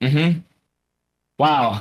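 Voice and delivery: put-on unimpressed voice. Joking about being the guy's coworker: acting as the unimpressed coworker. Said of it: "if I'm this guy's coworker, I'm like".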